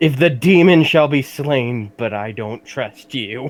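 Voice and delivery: shrieking, high, very loud in-character scream. A character screaming at an incoherent little creature: in-character screaming. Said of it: "screaming at the uh".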